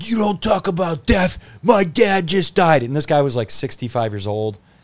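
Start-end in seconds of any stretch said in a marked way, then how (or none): 0.0-2.8 put-on drunk man yelling, higher pitch. Retelling an audience member confronting the comedian after a comedy set: imitating a drunk man yelling. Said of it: "yelling at me drunk".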